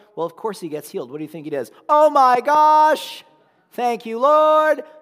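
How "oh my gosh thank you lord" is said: very loud, very high, drawn out, gosh stretched. Retelling a healed man praising God in a loud voice: loud shout. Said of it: "praising God in a loud voice, which, by the way, he was stuck on that volume".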